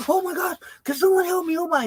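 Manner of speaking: mock frantic, high, freaked-out panicked cry. Retelling a man on the porch calling for help: mock-panicked. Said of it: "he was saying that in a panic".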